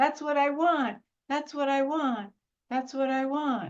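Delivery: put-on demanding, needy little child voice, pitched high. Comparing a life-force-hungry energy to a child: imitating a needy little child. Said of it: "like a needy little child going".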